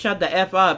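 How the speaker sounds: plain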